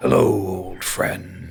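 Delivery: deep booming tree voice. Narrating a scene, the speaker voices a tree greeting Proserpine: booming bass tree voice. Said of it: "feel the booming bass in your chest".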